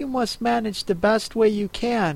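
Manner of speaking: plain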